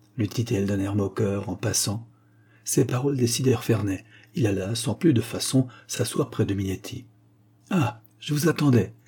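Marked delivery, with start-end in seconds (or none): 7.7-8.9 friendly, amiable, welcoming, pitched-up exclamation. The hunchback greets a man who comes to sit near him; exclaimed amiably. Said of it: "s'écria le bossu avec amabilité".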